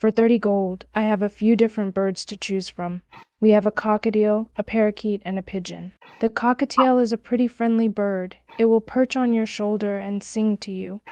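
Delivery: plain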